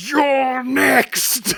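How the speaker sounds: yelling out. Voicing his character, pointing a warhammer at onlookers: screaming. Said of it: "just screams".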